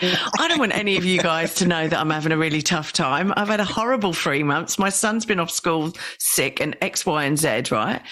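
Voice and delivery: ordinary talk, nothing marked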